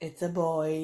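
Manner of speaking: quiet, low, hushed, understated. Retelling how a crying friend answered the speaker, mimicking a smirking reply. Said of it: "the friend just kind of smirked and went".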